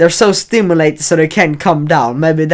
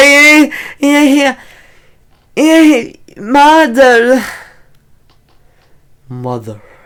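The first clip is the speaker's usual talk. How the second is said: high-pitched, shrill, dopey, unmanly mouth-breather voice; 10 semitones higher, 5 dB louder than usual. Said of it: "if you sound like".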